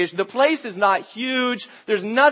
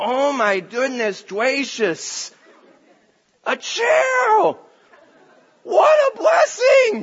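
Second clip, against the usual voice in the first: put-on toddler's gleeful, delighted, swooping, rising cry of utter delight; 4 semitones higher than usual. A parent retelling their almost two-year-old daughter's words, mock utter delight. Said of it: "saying with utter delight".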